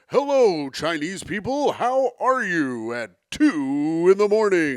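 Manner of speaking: game show host voice, drawn-out "two". Acting out a new game show hosting job: game show host voice. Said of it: "And now I will be hosting game shows".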